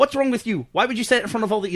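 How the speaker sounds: put-on Afrikaans accent, dropped into abruptly. Retelling what a man said, turning to his left, in an Afrikaner accent. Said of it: "I can do the Afrikaner accent".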